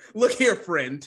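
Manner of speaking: stern, firm, no-nonsense voice. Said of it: "stern voice".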